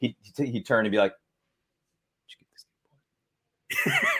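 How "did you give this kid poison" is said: slow, barely audible whisper. Retelling how an actor quietly delivered a line on set: imitating someone talking very quietly. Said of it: "He is talking so quietly".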